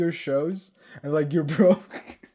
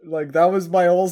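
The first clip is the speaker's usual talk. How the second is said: ordinary delivery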